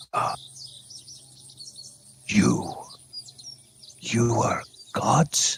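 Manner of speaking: stammering, frantic, breathy little creature voice. Voicing a creature that looks at the others frantically: frantic creature voice. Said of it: "he looks at that frantically and he says".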